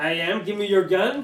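yelling in put-on voice. Threatening another player's character in a role-play scene: yelling in character. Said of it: "And we're yelling outside the house".

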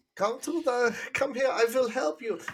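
bad put-on Polish accent, pitched very high. Joking about a film's accents, imitating Tom Felton doing a Polish accent. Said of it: "Tom Felton doing his Polish accent".

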